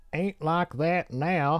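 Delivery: poor put-on Southern accent. Reading out a phrase, the speaker attempts a bad Southern accent. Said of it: "such a bad Southern accent".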